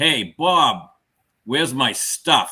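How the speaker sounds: loud yell projected as if over a crowd. Retelling calling out across a bar at a cocktail hour; retelling a yell. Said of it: "I yelled across the Margarita bar".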